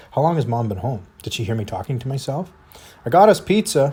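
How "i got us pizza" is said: very loud, high, bright, super cheery call. Reading a story where a mother calls back: super cheery voice. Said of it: "in a super cheery voice of her own".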